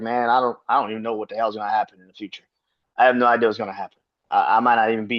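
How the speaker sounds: put-on beaten, deflated, defeated-sounding voice. Retelling what Joel Embiid said after the series, imitating Joel Embiid sounding defeated. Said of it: "he kinda sounded defeated".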